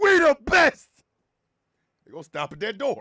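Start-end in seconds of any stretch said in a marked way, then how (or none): 0.0-0.9 shrill, very loud, high belted yell. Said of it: "you in the back gonna be like".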